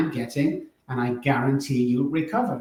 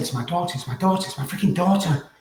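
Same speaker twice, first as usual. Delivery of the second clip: mock tearful crying, disbelieving, repeated words; 4 semitones higher than usual. Retelling waking a wife after a message from a daughter: imitating own past crying. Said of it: "I was crying".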